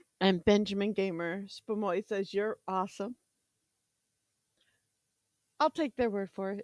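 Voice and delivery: chewing, talking through a mouthful. Reading out a comment someone sent, talking while munching. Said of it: "Sorry, I'm munching".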